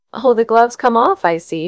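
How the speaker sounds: light, playful teasing tone. The narrator reads a woman answering a man, teasing. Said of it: "she teased him".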